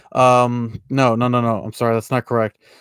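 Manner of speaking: usual speaking voice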